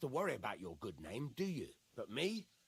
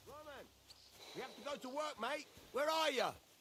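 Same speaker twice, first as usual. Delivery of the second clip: very high, carrying, calling-out shout; 12 semitones higher than usual. Calling out for a friend who cannot be found: yelling. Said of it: "What are you yelling for?".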